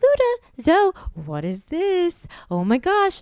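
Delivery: high, swooping, gushing, drawn-out excited pet-talk voice. Retelling what is said to the dogs when the box arrives: imitating own excited voice for dogs. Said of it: "because I'm saying it in that voice".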